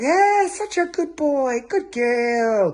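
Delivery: high, very slow, cheerful, doting happy tone. Dog trainer demonstrating the voice used to praise a dog, happy praising tone. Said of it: "that ch- tone in your voice".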